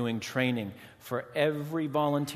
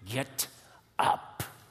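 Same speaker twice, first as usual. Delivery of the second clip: spoken through gritted, clenched teeth. Narrated scene, a man speaks to a sobbing child on the ground: through clenched teeth. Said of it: "says through clenched teeth".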